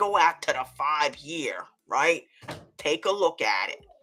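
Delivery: put-on very deep, low voice. Retelling what a trader said that morning: imitating a friend's deep voice. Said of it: "he comes in the pre-market with that deep voice".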